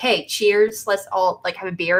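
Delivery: plain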